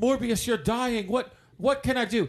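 small put-on British accent. Retelling a film scene, a host voices the antagonist in a British Doctor Who accent. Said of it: "in his little British Doctor Who accent".

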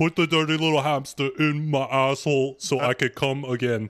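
high, goofy, animated cartoon caterpillar voice. In a crude comedy bit, say the line like the Bug's Life caterpillar. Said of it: "you sound like the caterpillar from Bug's Life".

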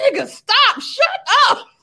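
put-on high, loud baby voice yelling, out of patience.

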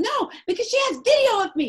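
shrill, high, loud acted yelling. Telling how a woman yelled while the speaker told the police; retelling her yelling. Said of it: "She's yelling".

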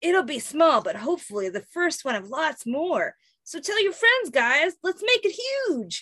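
deliberately bad, high-pitched, swooping cartoon character voice. Narrator reads Mikey's answer to Sally; bad Mikey voice. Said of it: "This is my bad Mikey voice".

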